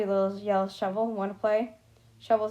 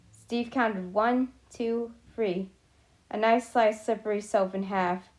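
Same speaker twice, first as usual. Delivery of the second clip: plain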